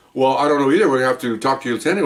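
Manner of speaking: ordinary delivery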